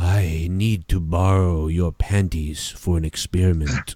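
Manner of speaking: creepy low voice.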